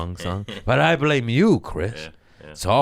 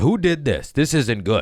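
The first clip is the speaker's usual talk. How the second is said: fussy, contained, pitched-up mild yell; 6 semitones higher than usual. Retelling yelling at managers at work: retelling own past yelling. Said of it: "I'm now yelling at managers".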